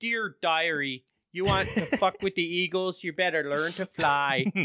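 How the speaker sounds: put-on very high, plain Minnesota accent. Retelling a show character who addresses the camera, in a Minnesota accent. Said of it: "her undisguised Minnesota accent".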